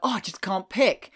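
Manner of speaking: plain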